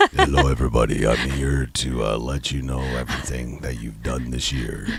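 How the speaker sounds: very low, eerie, hushed ghostly ASMR voice. A host voices the year-end reflection as a ghostly asmr inner voice. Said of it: "ASMR inner voice".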